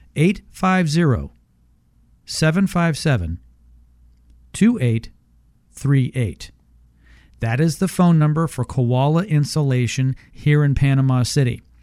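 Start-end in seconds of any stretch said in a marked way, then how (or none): 0.1-6.4 very slow, unhurried pace. Repeating the phone number one more time for listeners, very slow. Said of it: "I'm going to say it one more time very slowly".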